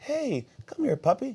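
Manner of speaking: mock very high, cheerful, happy puppy talk. Speaker acting out someone never bitten by a dog greeting a small dog: happy greeting to a puppy. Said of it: "You're happy about it".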